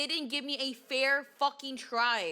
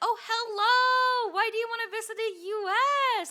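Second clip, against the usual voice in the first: mock overly nice, high, sweet, welcoming tone; 9 semitones higher, 5 dB louder than usual. Retelling how the interviewer in the next stall sounded: imitating a very nice interviewer. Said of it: "he was so fucking nice".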